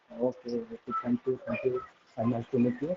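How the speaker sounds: soft, barely audible voice. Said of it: "You're not audible".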